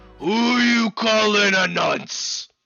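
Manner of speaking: loud bellowing, shouting orc voice. Voicing an orc in the camp answering the party: bellowing orc voice. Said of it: "another voice bellows back at you".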